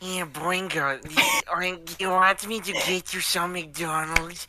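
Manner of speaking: shoddy, poorly done high voice, drawn out slowly. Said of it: "do a shitty Peter Lorre impression".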